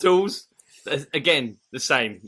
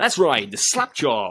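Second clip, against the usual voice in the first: silky, smooth tv commercial voice-over style. Showing how to do an advert on the podcast, in a smooth advert voice. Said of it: "give us your smooth advert voice".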